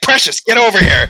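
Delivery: mock, very high, shrill, loud, angry voice. Mocking a big guy stuck walking a small dog, imitating an angry call. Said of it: "He's like getting pissed".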